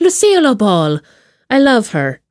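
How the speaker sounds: bad, put-on, sing-song Irish accent. Playing with a famous name during a chat, in a terrible Irish accent. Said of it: "That's a terrible accent".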